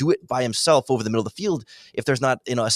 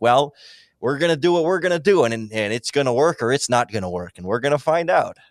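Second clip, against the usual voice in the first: convincing put-on Midwestern accent. Talking with another speaker, voicing someone in a put-on Midwest accent. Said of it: "an impressive Midwest accent you put on it".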